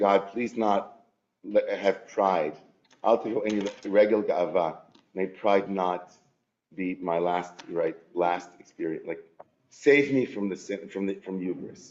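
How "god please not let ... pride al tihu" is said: usual speaking voice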